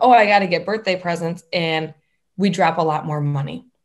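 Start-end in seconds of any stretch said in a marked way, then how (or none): 0.0-1.4 play-acted flustered, rushed, panicky fretting. Describing how people overspend on birthdays: imitating panicked shopper. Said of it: "we get into this panic mode".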